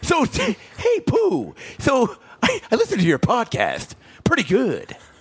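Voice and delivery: very high, swooping cartoon voice, drawn out. Playing Tigger in a bit, the speaker greets Pooh, Tigger voice. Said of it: "So I'll be Tigger".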